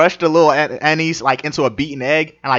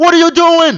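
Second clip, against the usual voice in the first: put-on angry yelling, higher and louder; 7 dB louder than usual. Imitating Gordon Ramsay scolding a cook holding an egg: Gordon Ramsay yelling. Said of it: "he's like".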